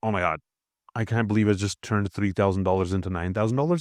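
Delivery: ordinary talk, nothing marked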